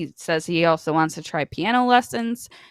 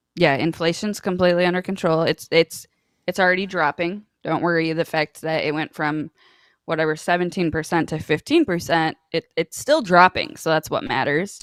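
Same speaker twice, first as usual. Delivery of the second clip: normal talking voice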